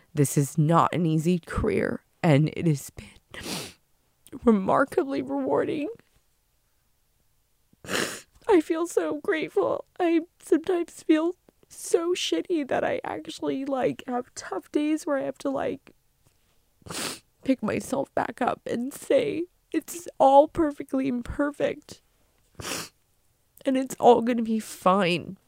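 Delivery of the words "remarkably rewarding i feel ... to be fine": high, tearful crying voice. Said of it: "Sorry for crying".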